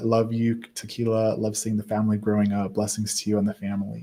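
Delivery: ordinary delivery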